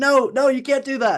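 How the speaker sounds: play-acted screaming, very high. Retelling a reaction to a risky pass while watching: imitating own screaming at the tv. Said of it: "I'd just be screaming at the T V like".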